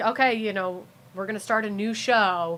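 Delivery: normal talking voice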